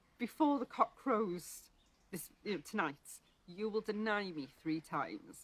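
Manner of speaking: ordinary talk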